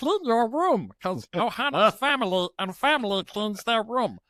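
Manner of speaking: high-pitched, silly cartoon voice. A parent recalls what they sometimes say to their daughter, in Stitch voice. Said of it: "I'm Stitch to my daughter sometimes".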